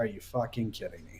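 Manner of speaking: muttering under the breath. Retelling watching the game next to his son, muttered under breath. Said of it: "that just went under my breath".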